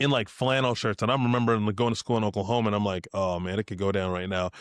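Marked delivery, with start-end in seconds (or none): none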